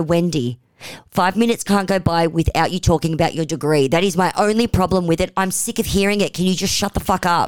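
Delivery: ordinary delivery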